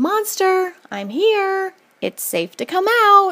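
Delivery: loud, very high-pitched brave call. Narrator calls out to a monster in the room: said really loud. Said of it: "said really loud".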